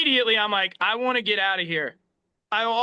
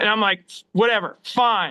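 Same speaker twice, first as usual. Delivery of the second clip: normal talking voice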